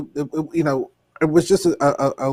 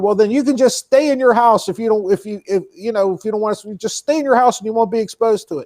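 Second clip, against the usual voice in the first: yelled, shouted voice thrown back upward; 6 semitones higher than usual. Retelling the shop owner yelling back up: imitating a man yelling back. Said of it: "this asshole's yelling back up to her".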